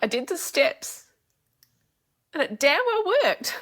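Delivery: very high, emotional, teary crying voice. Speaker telling listeners something finally worked for them, crying. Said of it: "I wish I could stop crying".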